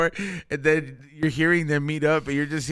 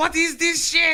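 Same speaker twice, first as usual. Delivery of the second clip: very high, angry, furious put-on German accent; 13 semitones higher than usual. Imagining a german person's reaction, the speaker acts it out: mock-angry german accent. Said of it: "He's just mad as fuck".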